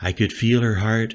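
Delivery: ordinary delivery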